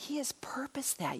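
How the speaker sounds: hushed, soft, intense, emphatic whisper.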